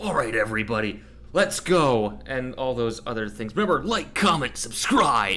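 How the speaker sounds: pumped-up, energetic youtuber host voice. Asked to do a YouTuber voice during a stream: YouTuber voice. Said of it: "Do a YouTuber voice".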